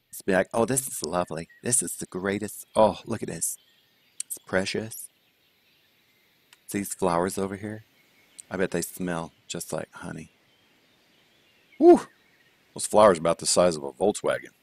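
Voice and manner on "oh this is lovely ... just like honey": put-on, prettified sweet voice, mocking. Reviewing a golf hole someone asked to call pretty: imitating Eric's pretty voice. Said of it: "I'll do his".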